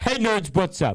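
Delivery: playful put-on American accent. Returning from a break, greeting the audience, American accent. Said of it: "do the American accent for fun".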